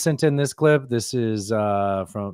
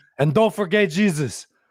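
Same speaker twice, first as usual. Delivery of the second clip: put-on Cuban accent, pitched very high; 9 semitones higher than usual. Retelling a fighter thanking everyone after winning a fight, imitating a Cuban accent. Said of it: "fucking Cuban accent".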